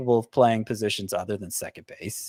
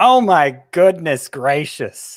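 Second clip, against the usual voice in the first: very loud, drawn-out, stunned, amazed play-by-play announcer call; 7 semitones higher, 12 dB louder than usual. Asked for his best impersonation, playing a mock-excited baseball announcer. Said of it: "your best impersonation of a baseball game announcer who just witnessed something extraordinary".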